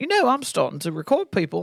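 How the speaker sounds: bad, sing-song, swooping put-on British accent. Retelling what Ben said about starting to record people: imitating Ben in a British accent. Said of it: "I'll do British accent".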